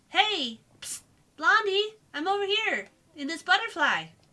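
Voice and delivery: very high, loud little fairy voice. Voicing a game's butterfly character: Navi voice. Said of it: "let's give him Navi's voice".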